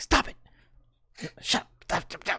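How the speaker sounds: soft, hushed whisper under the breath. Voicing a character scolding a spear over her shoulder: whispering. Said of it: "whispering over her shoulder to the spear".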